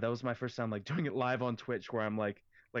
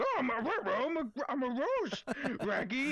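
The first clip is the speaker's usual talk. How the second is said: high cartoon dog voice, pitch swooping all over. Retelling a cartoon made on stream: Scooby-Doo voice. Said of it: "he's like".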